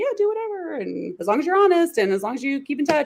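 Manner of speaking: high, breezy, laid-back voice.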